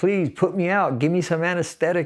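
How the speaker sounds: acted desperate yell. Retelling begging hospital staff after being stabbed, imitating a pleading yell. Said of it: "just yelling".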